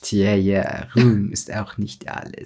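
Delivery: deliberate audio-drama voice, low, slow and drawn out. Retelling a Harry Potter scene, quoting Snape the way the audio drama has him. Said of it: "wie er im Hörspiel sagen würde".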